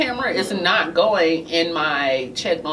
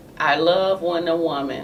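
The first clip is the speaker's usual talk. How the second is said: plain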